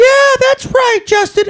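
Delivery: very high, squeaky puppet voice. Describing a pizza commercial, quoting a puppet that chimes in: high puppet voice. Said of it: "a puppet and a high voice that goes".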